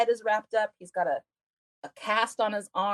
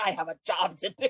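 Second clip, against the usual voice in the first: put-on outraged voice. Retelling a scene where the nurse gets outraged: imitating an outraged nurse. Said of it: "she gets outraged".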